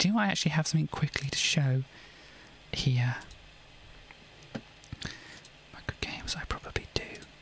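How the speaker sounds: quiet whisper. Checking whether there's something quick to show, whispering. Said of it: "I didn't mean to quite whisper like that".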